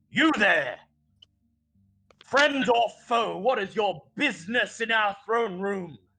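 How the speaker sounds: barking, high-pitched voice. Voicing a guard challenging intruders in a throne room: barking. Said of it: "he barks".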